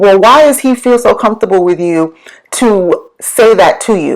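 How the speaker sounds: ordinary talk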